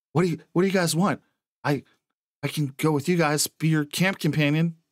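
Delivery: frightened, eager-to-please tone. Voicing a woman pleading with intruders to take her along: very scared. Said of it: "she gets very scared and says".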